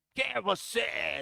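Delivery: creaky, rough, hostile, angry, demanding demon voice. Retelling a demon's challenge to a pastor: imitating an angry demon. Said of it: "com raiva".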